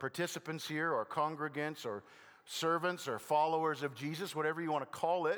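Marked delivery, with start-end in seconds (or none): none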